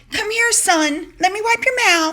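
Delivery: very high, fussing, motherly voice. Retelling how Meghan wiped Harry's mouth: imitating Meghan fussing. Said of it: "She's like".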